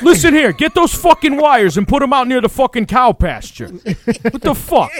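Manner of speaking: high, fake tough-guy New York accent. Mocking a guy in Minnesota who acts tough, trying to talk like a New Yorker. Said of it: "trying to talk like a New Yorker".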